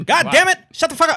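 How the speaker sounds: very high, very loud, shrill booming holler at full volume. Snapping at another speaker for cutting in: Bernie Mac voice. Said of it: "you sounded like Bernie Mac".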